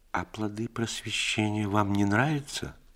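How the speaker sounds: worried, shy, anxious, timid tone. Nastasya Ivanovna asks the man who wrote a modern play, anxious, timid. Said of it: "тревожно, робко спросила".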